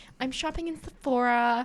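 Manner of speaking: put-on mean high school girl voice. Playing a mean girl from an american high school movie: mean high school girl voice. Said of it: "the mean girls that are like".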